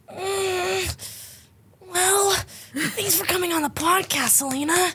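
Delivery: put-on high anime character voice, drawn-out mm. Urged to do it on a podcast, doing the anime voice. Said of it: "That and the anime voice".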